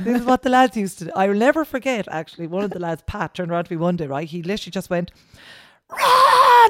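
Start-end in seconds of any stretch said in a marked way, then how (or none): 5.9-6.7 very loud, shrill, high, stretched-out scream. Retelling a colleague in a patrol car shouting an order: imitating a colleague screaming. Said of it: "literally screamed that into my face".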